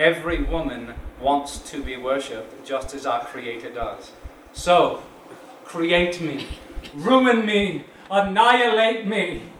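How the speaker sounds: anguished, passionate stage delivery. A writer begins speaking as a tormented character in his play: tormented. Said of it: "speaking as a tormented character".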